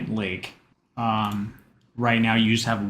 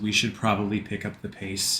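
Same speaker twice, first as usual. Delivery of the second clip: concerned, worried voice full of concern; 5 dB quieter than usual. Voicing a character urging the group to hurry: concerned voice. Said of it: "with a lot of concern in his voice".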